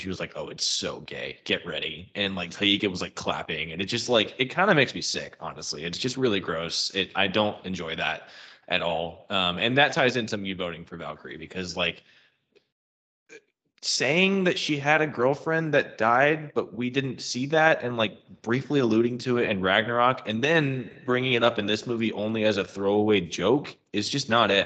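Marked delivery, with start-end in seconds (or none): 0.3-2.1 smug delivery. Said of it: "real smug".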